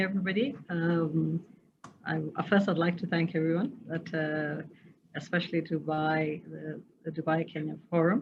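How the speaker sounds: soft, low-volume speech, too quiet to hear. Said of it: "a little bit louder would be good".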